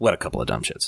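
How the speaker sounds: mock offhand, dismissive, throwaway tone. Quoting the album's closing line, imitating a dismissive line. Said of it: "the dismissive".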